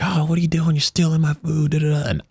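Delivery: high, angry shouting. Recounting a drunk night, the speaker quotes a man yelling at him: retelling a yell. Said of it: "he's like yelling at me like".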